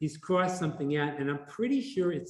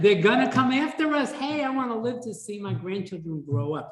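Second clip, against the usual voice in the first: woman's voice, pitched up higher; 6 semitones higher, 4 dB louder than usual. Retelling what Aline said about their comic, imitating Aline's voice. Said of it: "I'm saying it in her voice".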